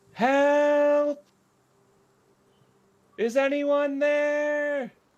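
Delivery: very high, distant cry, "help" drawn out. Game master voices a man calling to the players from the grass: distant cry for help. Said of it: "It sounds very far away".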